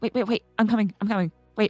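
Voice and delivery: rushed, fast, scrambling, hurried delivery. Voicing a character hurrying after a companion: hurriedly calling to wait. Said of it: "she'll very quickly be like".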